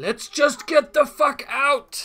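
very loud, very slow, high booming drawn-out shout. Voicing a character caught in a blast who wants to flee: shouting. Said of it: "And he shouts".

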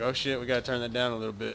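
plain

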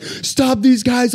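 shrill, very high-pitched yelling. Telling how a famous man was thrown into a van in a staged abduction, imitating someone yelling. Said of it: "Brad Pitt's yelling like".

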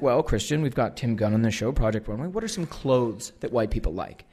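ordinary talk

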